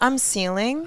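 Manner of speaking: put-on snobby, stuck-up prep-school boy voice. Giving a name a character voice: snobby prep school boy voice. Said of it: "a snobby, like, prep school boy".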